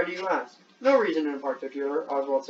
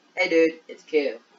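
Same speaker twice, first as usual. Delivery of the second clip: loud, cartoonish kid character voice; 6 dB louder than usual. Reading a character's line aloud, sounding like Cartman. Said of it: "that sounded like Cartman".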